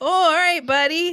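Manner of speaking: put-on Saskatchewan accent. Retelling a henchman's reply about blowing up the bomb: imitating a Saskatchewan accent. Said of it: "Saskatchewan middle of the field accent".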